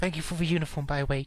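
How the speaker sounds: in a whisper. Voicing Iris thanking someone for the uniform before leaving: whispering.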